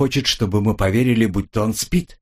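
ordinary delivery

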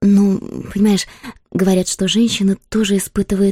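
ordinary delivery

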